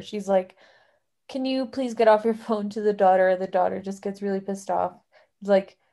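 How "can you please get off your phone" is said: ordinary delivery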